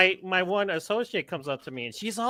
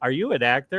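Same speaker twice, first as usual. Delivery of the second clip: sarcastic tone, lower pitch; 5 semitones lower, 4 dB louder than usual. Retelling asking a guest whether he is an actor: retelling own sarcastic question. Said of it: "I was being sarcastic".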